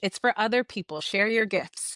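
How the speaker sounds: normal talking voice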